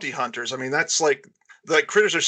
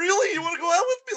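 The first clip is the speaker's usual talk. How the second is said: put-on surprised voice, higher pitched. Retelling how Billy reacts when she agrees to go out: imitating surprised Billy. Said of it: "he's all surprised".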